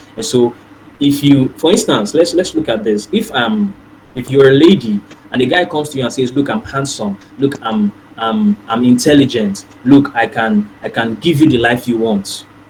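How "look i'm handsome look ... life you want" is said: usual speaking voice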